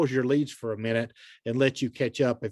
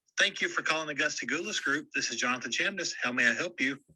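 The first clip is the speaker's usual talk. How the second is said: soft, friendly, upbeat voice; 6 dB quieter than usual. Demonstrating a phone greeting script to listeners, smiling while talking. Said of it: "a recording of me smiling going through the script".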